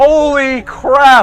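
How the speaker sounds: sudden voice crack. A game announcer reacts on air as a hit lands near his car, voice cracking. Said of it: "If you can hear my voice crack".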